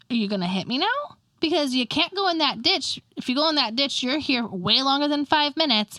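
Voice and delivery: ordinary talk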